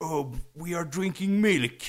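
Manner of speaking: derisive, snide, put-on caricature vegan voice. Arguing about vegans, quoting what they say: mocking vegan voice. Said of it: "You were going into your vegan voice".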